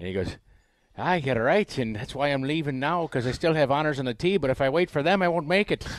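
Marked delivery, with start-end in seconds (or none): 1.0-5.9 bad put-on Irish accent, pitched up, loud. Retelling a man's funny reply to your tow rope joke, use a terrible Irish accent. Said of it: "Terrible Irish accent".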